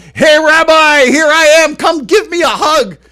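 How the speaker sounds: loud, shrill, high, slowly drawn-out holler. Retelling a waiting-area moment, the speaker reenacts yelling across the hall to a rabbi. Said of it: "I yelled out real loud".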